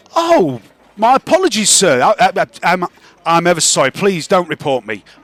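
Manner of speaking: nervous, flustered, stammering, tripping over words. Voicing a character who looks down at a player's feet: in character, flustered apology. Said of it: "looks down at your big hairy feet and goes".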